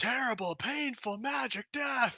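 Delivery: very high, stretched-out, drawn-out yelling. Voicing a character who repeats the line over and over: NPC yelling. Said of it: "he's just, like, yelling".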